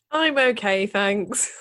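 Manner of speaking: speaking through laughter over the words. Co-host answering the host's greeting at the start of the podcast, laughing while speaking. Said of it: "Why are you laughing".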